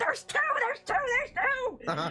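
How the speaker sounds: shouting goblin voice. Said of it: "It's like".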